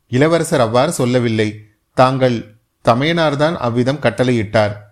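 plain

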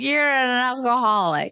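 put-on acted drunken slurring. Retelling a wasted Tamara calling Shannon an alcoholic, imitating Tamara's drunk slurring. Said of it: "She was like slurring".

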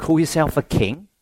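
ordinary delivery

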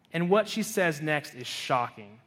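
normal talking voice

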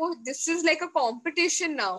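plain

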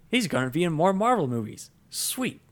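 high, fast excited gushing. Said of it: "I was so excited".

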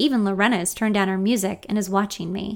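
ordinary talk

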